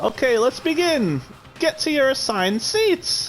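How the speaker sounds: very high-pitched put-on character voice. Retelling a line announced in a Monokuma voice. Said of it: "in his Monokuma voice".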